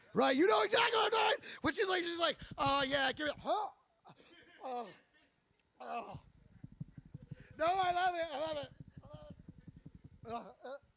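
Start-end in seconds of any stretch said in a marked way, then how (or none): 2.5-10.6 mock, feigned, laid-on pleasure and enthusiasm. Imitating someone who pretends to like it for pay: imitating fake enthusiasm. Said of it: "pretends to like it 'cause she's getting paid".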